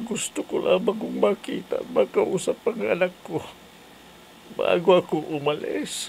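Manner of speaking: tearful, weeping speech. A mother, asked by her child why her voice sounds that way, crying while talking. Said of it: "umiiyak ka ba ha?".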